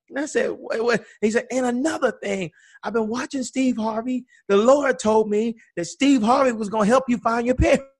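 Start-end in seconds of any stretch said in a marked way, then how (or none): 1.5-7.7 put-on loud yell, much higher pitch. Retelling what a man in the barbershop told the speaker and sister, retelling a loud yell. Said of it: "he yells at me and my sister".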